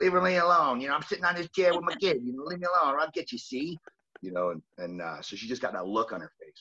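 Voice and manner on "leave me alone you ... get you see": high-pitched cartoon tough-guy gangster voice. Voicing what she'd say while guarding her kid, in a Bugs Bunny voice. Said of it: "she's got like this Bugs Bunny in her voice".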